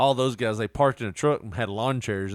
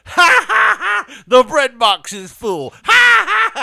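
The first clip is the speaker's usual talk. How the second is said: very high, very loud, very slow, booming, shrill laughing; 13 dB louder than usual. Imitating someone who repeats a movie line and laughs again. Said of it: "has to repeat the last line and laugh again".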